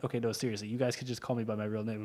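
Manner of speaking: ordinary talk, nothing marked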